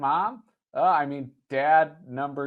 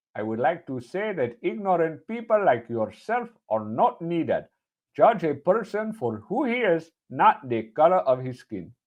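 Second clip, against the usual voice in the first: put-on Indian accent, laid on thick, over-the-top. Told to give a quoted line another go, exaggerated Indian accent. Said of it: "We'll just go with your super racist one".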